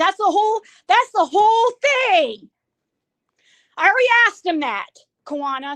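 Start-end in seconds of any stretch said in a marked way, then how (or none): 0.9-4.9 shouting in a raised, yelling voice. Repeating a point to the listener, yelling. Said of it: "sorry for yelling".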